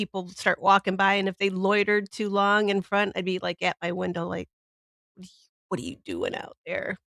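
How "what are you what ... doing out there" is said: mock, breathy, hushed, irritated, angry whisper. Retelling getting mad at people loitering outside the window: imitating own angry past self. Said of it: "I'd get so mad".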